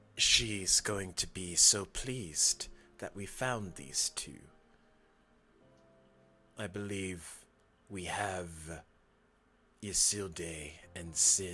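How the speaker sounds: low, covert, conspiring, secretive tone. Overheard figures discussing the two they found, in a hushed tone. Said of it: "you hear in a very like hushed tone".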